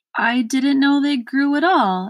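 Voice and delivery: bashful, shrinking. A little boy answers an irritable earl in front of a crowd, even more timid. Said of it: "even more timidly".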